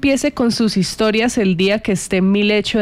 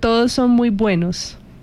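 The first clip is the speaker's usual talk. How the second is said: ordinary talk, nothing marked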